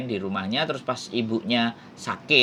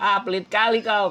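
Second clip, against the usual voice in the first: put-on Medan accent, local way of talking; 9 semitones higher, 3 dB louder than usual. Retelling a remark about paying for tickets, in a Medan accent. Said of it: "kalau ngomong kan kayak gitu orang Medan".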